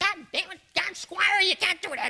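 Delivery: funny little voice, very high, squeaky and loud. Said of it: "He had his funny little voice".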